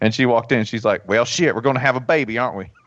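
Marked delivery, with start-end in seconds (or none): 1.1-2.7 put-on rural South Georgia country accent. Retelling what the midwife from South Georgia said, imitating a Southern accent. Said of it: "some sort of shit-kicking Southern accent".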